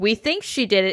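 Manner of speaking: hedging tone with stress on think. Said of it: "Not like".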